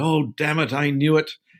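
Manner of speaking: put-on exasperated Essex accent. Retelling his boss's reply on the phone; John's Essex accent. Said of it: "with his Essex accent".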